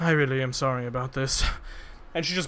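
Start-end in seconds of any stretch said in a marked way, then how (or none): 0.0-1.4 muttered quietly under the breath. Voicing a character just before her attack: said under her breath. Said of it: "just kind of says under her breath".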